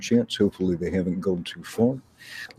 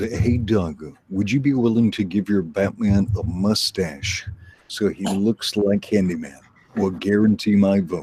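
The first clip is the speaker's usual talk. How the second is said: ordinary delivery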